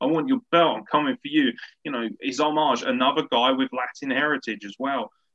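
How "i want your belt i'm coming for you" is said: mock fired-up, put-on screaming. Retelling how a wrestler screamed at the champion: imitating someone screaming. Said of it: "he's screaming at him".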